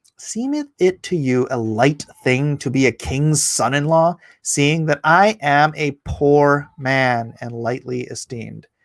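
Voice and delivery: ordinary talk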